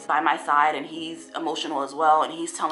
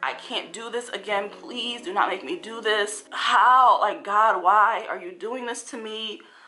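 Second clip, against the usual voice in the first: mock crying, high, sobbing, desperate, breaking down; 5 semitones higher than usual. Speaker recounts being told the babies would not survive, retelling screaming and crying. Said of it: "i am screaming i am crying i'm like".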